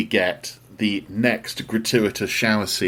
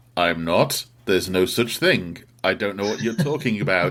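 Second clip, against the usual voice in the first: put-on guilty, obviously lying tone. Retelling a film character denying he is in the Illuminati: imitating a guilty denial. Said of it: "in a very, "Yes, I am. ... Oh, God," kind of way".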